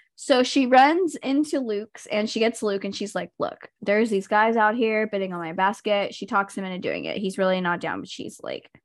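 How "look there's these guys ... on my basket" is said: ordinary talk, nothing marked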